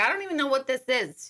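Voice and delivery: loud, put-on Brooklyn accent. Retelling a listener's wife reacting to a gift, imitating a Brooklyn accent. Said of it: "She's got that Brooklyn accent".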